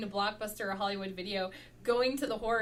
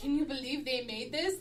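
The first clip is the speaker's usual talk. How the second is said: usual speaking voice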